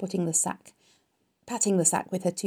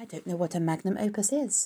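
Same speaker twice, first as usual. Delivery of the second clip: plain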